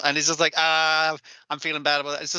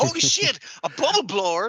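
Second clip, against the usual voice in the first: mock excited voice, higher; 7 semitones higher than usual. Retelling a character finding a bubble blower: imitating an excited character. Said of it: "they're all so fucking excited by this".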